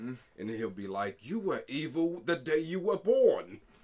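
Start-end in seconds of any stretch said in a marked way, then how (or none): 1.2-3.6 put-on raised, loud, high British accent. Describing the show Lucifer, acting out Lucifer's line in a British accent. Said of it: "he'll say it in this fucking British accent".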